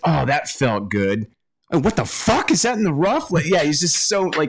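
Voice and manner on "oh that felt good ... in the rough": put-on happy tone suddenly turning furious. Retelling a golfer's quick switch after a shot: imitating happy turning to furious. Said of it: "goes from happy to super pissed off".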